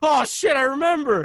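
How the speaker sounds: loud, sudden blurted-out words.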